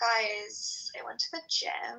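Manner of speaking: creaky, crackly vocal fry, every word stretched long. Mimicking how certain people talk, in vocal fry with drawn-out words. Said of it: "like talk like this".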